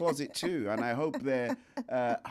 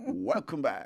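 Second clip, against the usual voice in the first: put-on modern radio presenter voice. Host welcoming listeners back, in a modern radio voice. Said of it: "I did my voice of modern radio".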